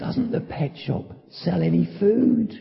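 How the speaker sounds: feeble, faint, soft, very weak little voice. Telling a joke, the lady recalls the parrot speaking, mock very weak voice. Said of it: "say in a very weak voice".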